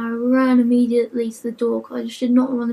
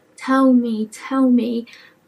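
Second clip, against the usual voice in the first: normal talking voice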